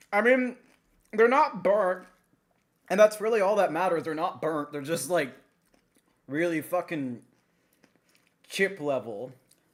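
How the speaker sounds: loud, chewing, talking through a mouthful. Eating fries they just made, chewing while talking. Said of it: "I'm sorry if I'm chewing too loud".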